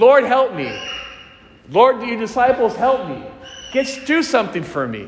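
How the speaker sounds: tearful, anguished, desperate crying voice. Acting out begging the Lord for help with a son: acted-out screaming, crying plea. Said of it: "crying and screaming".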